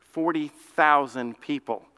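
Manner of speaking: THOUSAND stressed and drawn out slowly.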